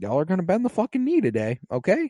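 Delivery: acted smug, self-satisfied, sing-song taunting delivery. Retelling how Tyrion answered Daenerys: smug Tyrion impression. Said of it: "he said it smugly".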